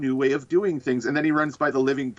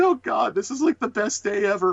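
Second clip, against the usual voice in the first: high, gleeful cackling through tears of laughter; 8 semitones higher than usual. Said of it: "Osborn's laughing so hard he's crying".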